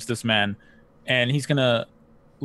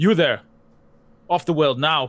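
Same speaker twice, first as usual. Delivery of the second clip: loud, challenging call; 4 semitones higher, 3 dB louder than usual. Voicing a character moving to apprehend a stranger: calling out to someone. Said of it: "calling out to them".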